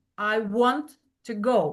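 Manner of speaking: stress on want and go. Explaining sentence stress with an example sentence: stress on want and go. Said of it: "we pronounce this with the stress want and go".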